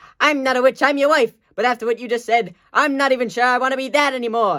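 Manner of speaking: high-pitched woman's character voice. Performing both parts of a Princess Bride scene, speaker voices the wife: Valerie voice from Princess Bride. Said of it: "I'll play both characters".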